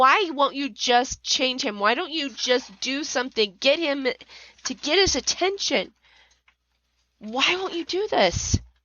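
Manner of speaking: put-on angry screaming. Retelling kneeling and screaming angrily at God: retelling angry screaming. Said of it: "yelling, screaming at him".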